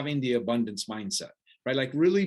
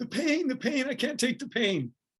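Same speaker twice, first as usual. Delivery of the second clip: imitated kid screaming, mock and acted out, much higher; 11 semitones higher than usual. Retelling a story about a kid who fell while running, imitating a kid screaming. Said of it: "he's screaming".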